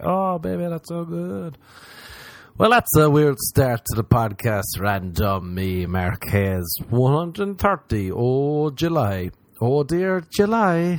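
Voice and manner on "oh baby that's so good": fake pleasure, slower. Joking on a podcast about faking it in bed, faking pleasure. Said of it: "And I'm faking the whole faking".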